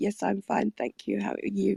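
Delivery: flat, creaky, mechanical robot-like delivery. Mocking their own polite greetings to another speaker: imitating a robotic voice. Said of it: "We just sound like robots".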